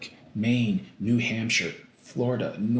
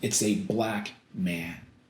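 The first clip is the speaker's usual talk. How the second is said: normal talking voice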